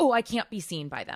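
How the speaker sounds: acted-out frantic, panicked, desperate scrambling voice. Retelling hiding from someone in a dream: acting out frantic panic.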